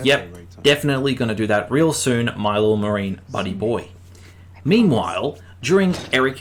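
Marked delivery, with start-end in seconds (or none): none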